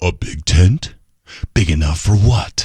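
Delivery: dramatic movie trailer announcer narration voice. Describing a video about a congressman, the announcer asks questions in movie trailer voice. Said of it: "the announcer says in that movie trailer voice".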